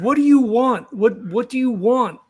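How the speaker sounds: demanding outburst in a character voice. Speaking in character to a fleeing figure: yelling in character. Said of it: "I think Macaron just yells".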